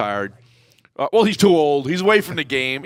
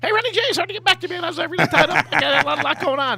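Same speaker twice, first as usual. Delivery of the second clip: squeaky, very high little voice; 11 semitones higher than usual. Retelling a phone call from Herman Edwards in a squeaky Herm Edwards impression. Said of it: "Herm got a little squeaky voice".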